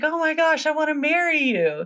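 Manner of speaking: mock excited gush, very high and swooping. Retelling a story, quoting the prince's proposal: imitating an excited prince. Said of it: "so the guy's so excited".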